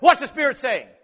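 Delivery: challenging tone. Retelling how a man at church approached them, mock-challenging tone. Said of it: "in this attitude, in this tone".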